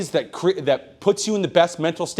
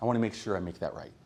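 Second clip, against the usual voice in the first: mock-serious, quieter, serious-sounding tone; 9 semitones lower, 13 dB quieter than usual. Recalling pitching to someone, acting out your own earlier way of talking: retelling own serious tone. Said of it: "I talk real serious".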